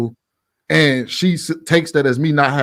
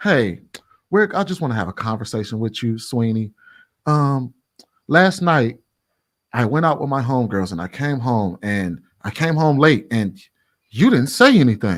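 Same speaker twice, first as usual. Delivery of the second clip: put-on extremely nice tone, slower. Acting out how a woman would raise it with him, imitating an extremely nice tone. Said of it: "say that extremely nicely".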